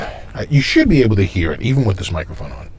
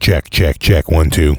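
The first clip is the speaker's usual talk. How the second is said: robotic voice, lower; 3 semitones lower, 4 dB louder than usual. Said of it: "the robot voice".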